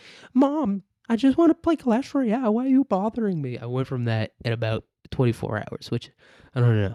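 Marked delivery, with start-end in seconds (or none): 0.3-3.5 put-on high-pitched twelve-year-old gamer kid voice. Acting out a kid talking back to his mom: twelve-year-old kid voice. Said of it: "to being like".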